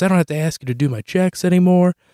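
fake thrilled exclaiming. Retelling mom's reaction to doing her own checks; imitating mom's excitement. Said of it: "She's all excited. She goes".

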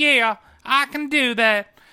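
put-on deliberately annoying, bad, high, slow, drawn-out cartoon girl voice. Retelling how she answered a request for an annoying movie voice: bad Lisa Simpson impression. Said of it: "that's my worst fucking Lisa Simpson impression".

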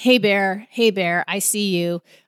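ordinary talk

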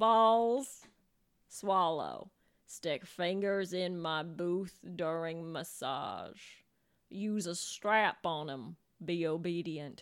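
put-on low, slow Russian accent. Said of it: "Give us an accent".

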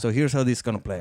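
respectful, courteous, polite voice.

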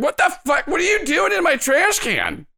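very high, indignant woman's voice, swinging pitch. Narrating a ruckus in the trash cans as the neighbor comes out, voicing the neighbor woman. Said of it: "a woman comes out and she's like".

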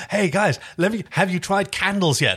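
playful, high, pushy salesman voice.

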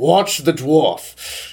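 strange, odd put-on character delivery. Acting out a line while stepping over a fallen guard: odd in-character delivery. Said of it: "I don't know why I said it like that".

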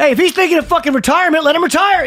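very high, squeaky, lousy, tossed-off promoter voice.

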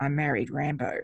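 mock mutter under the breath. Retelling what a woman said walking away after learning who he is: retelling an under-breath remark. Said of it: "under her breath".

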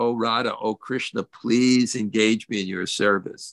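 ordinary talk

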